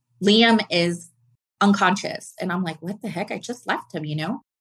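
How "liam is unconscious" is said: plain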